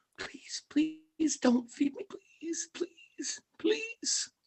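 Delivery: tiny whispered mouse voice, pleading tone. A game master voices a mouse being picked up by its tail: little mouse voice. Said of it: "you guys can hear the little mouse".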